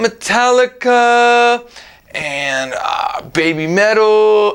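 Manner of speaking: hesitant still-thinking tune, list left hanging unfinished. Showing how intonation marks an unfinished list, hesitant, like still thinking. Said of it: "we can do it just with intonation... if we act like we're thinking".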